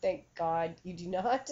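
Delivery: ordinary delivery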